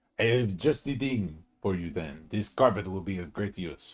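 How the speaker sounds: put-on French-accented voice. Replying to another character, the speaker talks in a french accent. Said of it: "Why am I French?".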